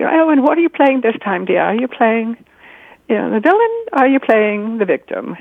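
put-on British lady's accent. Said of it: "'cause she has, you know, a British accent".

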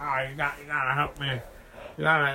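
cartoon voice, thoroughly drunk. Imitating a drunk mayor from a Simpsons episode: drunk mayor from The Simpsons. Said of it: "he's just so drunk".

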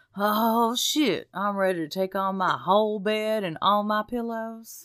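put-on tipsy, drowsy bravado. Describing what wine does to them, doing an impression of self wine drunk. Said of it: "Here's my impression of me wine drunk".

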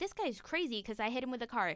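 ordinary delivery

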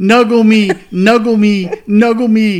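shrill, acted yelling with the same words repeated. Retelling how she ran at the geese: imitating someone yelling. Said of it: "she's yelling".

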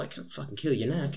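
put-on Irish accent. Acting out another person's line while telling a story to friends, in an Irish accent. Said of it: "Pretty good accent".

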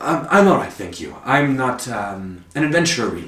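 polite put-on robot voice. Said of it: "Was that Pathfinder voice?".

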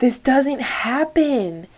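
high, put-on sobbing scream, voice breaking. Retelling a frightening moment, reenacting screaming while crying. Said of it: "bawling my eyes out, screaming, like".

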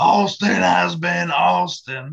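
loud, slow, drawn-out, throat-straining voice. Signing off the show, naming each host in turn: Stone Cold Steve Austin voice. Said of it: "Don't ask me to do it again 'cause it hurts my throat".

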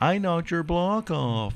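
put-on high, whiny complaining voice. Recalling childhood game arguments: imitating Tim whining. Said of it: "he would whine that out".

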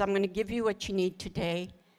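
ordinary talk, nothing marked

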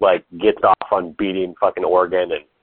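plain

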